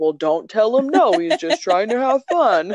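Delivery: acted scolding tone. Retelling her husband downstairs scolding the kid, imitating a reprimanding tone. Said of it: "He's reprimanding the kid".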